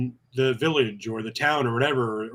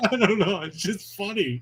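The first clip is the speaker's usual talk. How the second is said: holding back a laugh, stifled, pitched up; 8 semitones higher than usual. Asked by a co-speaker why they're about to laugh, on the verge of laughing. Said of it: "Why are you about to laugh?".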